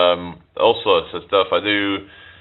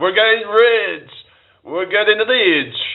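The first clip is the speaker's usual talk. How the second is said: very high voice with put-on Russian accent; 13 semitones higher than usual. Streamer reacting to super chat donations, in a Russian accent. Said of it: "I did it in the Russian accent".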